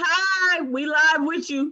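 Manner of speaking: loud, high voice, called out across a room.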